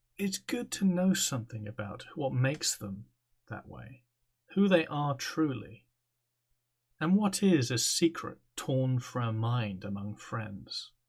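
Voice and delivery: calm, even, composed demon voice. A game master voices a huge spider demon giving the players a gift, calm demon voice. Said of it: "And before you stands a titanic arachnid entity. The demon, once contained within the circle, towers over you. / And before you stands a titanic arachnid entity. The demon, once contained within the c".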